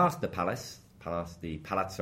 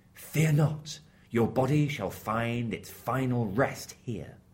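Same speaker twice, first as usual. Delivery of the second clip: grand, put-on heavenly angel voice; 3 semitones higher than usual. Retelling a legend, voicing the angel speaking to the shipwrecked evangelist, in an angel voice. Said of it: "That's my best angel voice".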